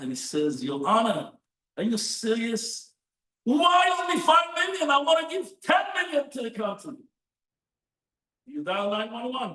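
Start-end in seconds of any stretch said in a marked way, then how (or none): 0.6-6.9 mock, high, very upset outburst, losing it. Acting out a man answering a judge's ruling: acting very upset. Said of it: "And the guy gets very upset".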